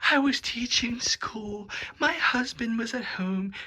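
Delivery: very high-pitched, overwrought, dramatic delivery. Mocking a woman telling her missionary story, mock-dramatic imitation of her. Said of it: "She's telling the story of when the missionaries attacked her".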